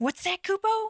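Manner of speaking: tiny, very high, squeaky voice. Voicing a character who addresses Kupo, in a squeaky, really high voice. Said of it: "Squeaky really high voice like this".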